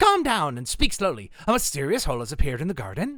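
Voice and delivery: put-on Irish accent. Voicing a character's lines, slightly Irish-sounding accent. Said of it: "I kinda sound like I'm Irish".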